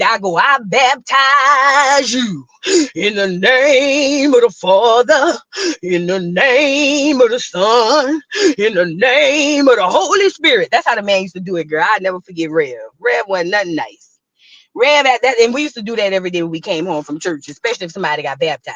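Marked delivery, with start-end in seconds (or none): 0.4-10.7 very slow preacher voice. Speaker recalls baptizing a skinny kid in childhood, in a preacher voice. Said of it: "I mean the preacher voice".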